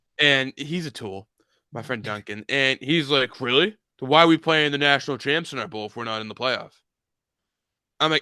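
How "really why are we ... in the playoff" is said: dry, needling, acted-out sarcasm. Retelling what a friend said: imitating Duncan sarcastically. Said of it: "he's being sarcastic, obviously".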